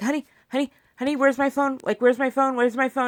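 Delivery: put-on frantic, fast, panicked, repeated pleading tone. Retelling asking the husband for the phone: imitating own panicked asking. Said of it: "I was just panicked".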